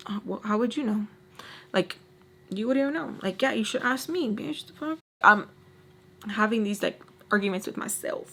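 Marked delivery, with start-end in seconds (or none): 0.1-5.0 mock muttering under the breath. Retelling a past argument while sitting there, retelling muttering under breath. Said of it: "I'm just sitting there under my breath".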